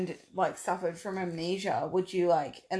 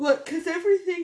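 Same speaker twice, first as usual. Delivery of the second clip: yawning, much higher and louder; 11 semitones higher, 7 dB louder than usual. Explaining a movie's end scene to the other hosts, talking while yawning. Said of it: "stop talking while you're yawning".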